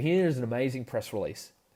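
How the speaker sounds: normal talking voice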